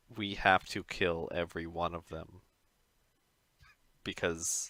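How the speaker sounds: very hushed, soft aside tone. Narrating Mozgus turning to his group, giving his line in a very hushed tone. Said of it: "in a very hushed tone".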